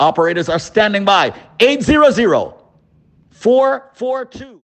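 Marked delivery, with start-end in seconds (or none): 1.6-4.5 very slow, deliberate delivery. Host repeats the phone number for callers, said slowly. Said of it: "Let me say the number slowly".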